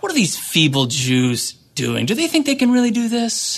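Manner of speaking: mock sneering, scornful jeer with swooping pitch. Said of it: "He mocks their ambition".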